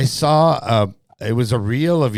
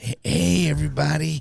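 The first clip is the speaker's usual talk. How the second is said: put-on hoarse stuntman voice, higher and quieter; 4 semitones higher, 4 dB quieter than usual. Going into character to greet everybody: Steve-O voice. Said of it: "I need to work on my, my Steve-O".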